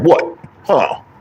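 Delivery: put-on tough-guy tone. Retelling how a rival acted at a show: imitating a B-boy attitude. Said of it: "a B-boy attitude".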